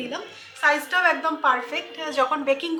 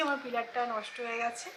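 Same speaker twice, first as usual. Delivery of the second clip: much softer, hushed, low voice. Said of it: "আমি আস্তে আস্তে বলছি".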